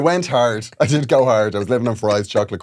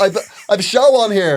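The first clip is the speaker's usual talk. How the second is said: very high, indignant, entitled tone; 9 semitones higher, 4 dB louder than usual. Retelling a complaint to venue staff about missing posters: mock entitled Karen complaint. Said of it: "full Karen".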